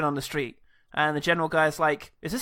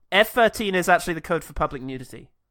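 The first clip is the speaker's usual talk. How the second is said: ordinary delivery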